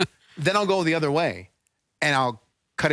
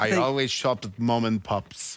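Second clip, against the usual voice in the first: put-on German accent; 3 semitones lower than usual. Asked to try accents, the speaker says the line again: german accent.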